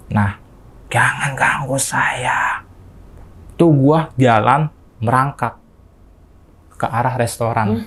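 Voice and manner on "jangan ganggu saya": put-on weighty, heavy old woman, grandma voice. Retelling words spoken while possessed, in a heavy old grandma voice. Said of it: "Suara gue kayak suara nenek-nenek gitu. Berat".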